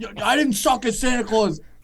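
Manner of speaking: put-on drunken, yelling, protesting voice. Retelling walking drunk down a strip of bars: imitating himself drunkenly yelling.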